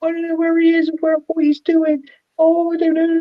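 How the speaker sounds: really upset, crying, very high. Retelling how a woman being filmed couldn't find her boyfriend, imitating someone crying. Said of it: "She's sort of really upset, crying".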